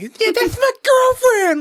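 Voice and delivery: put-on very high, loud hollered call. Retelling a movie scene where a character yells from the rafters: imitating a yell. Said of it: "he yells that".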